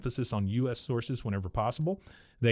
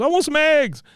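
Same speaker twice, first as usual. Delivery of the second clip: mock shrill, high, very loud distraught cry; 13 dB louder than usual. Retelling a cartoon scene where Peggy refuses a bottle: imitating distraught Peggy. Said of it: "she's distraught at this point".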